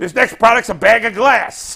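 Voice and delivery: put-on very loud, slow Chicago accent with a salesman voice. Retelling a comedy sketch about a toy salesman, in a chicago accent. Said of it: "the Chicago accent".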